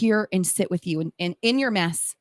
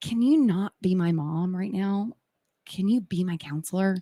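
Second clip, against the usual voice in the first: acted grave, dead-serious, earnest tone. Retelling a son asking to talk: imitating someone speaking very seriously. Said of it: "very, very seriously".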